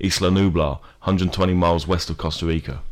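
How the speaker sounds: normal talking voice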